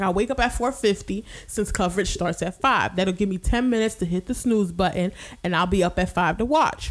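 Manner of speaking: plain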